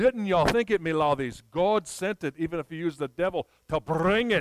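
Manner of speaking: put-on old-sounding Scottish brogue. Telling a story, the widow answers the village ruffians: old scottish brogue. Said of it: "in her old Scottish brogue".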